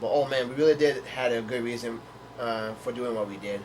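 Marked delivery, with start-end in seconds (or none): none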